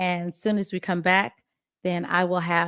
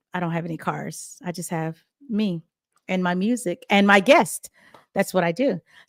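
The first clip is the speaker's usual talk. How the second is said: usual speaking voice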